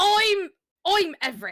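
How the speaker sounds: loud stumbling character voice, stumbling on I'm. Answering a request for a best Everett impersonation: Everett impersonation. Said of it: "give me your best Everett impersonation".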